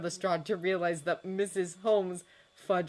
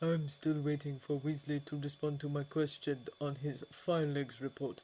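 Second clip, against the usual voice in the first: ordinary delivery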